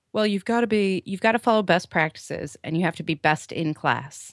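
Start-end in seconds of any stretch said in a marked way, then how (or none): none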